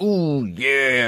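unconvincing, botched put-on wrestler growl voice. Mocking how a wrestler talks as a hero: bad Macho Man impression. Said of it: "That's the worst Macho Man impression I've ever heard".

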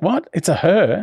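high, stunned, incredulous shocked disbelief. Retelling a wife's reaction to a woman visitor: imitating shocked disbelief. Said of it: "shocked that it's a woman".

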